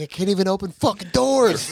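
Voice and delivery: very high-pitched, shrill, mock screaming rant. Retelling a man going off about his expensive nails, retelling a screaming rant. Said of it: "he's screaming".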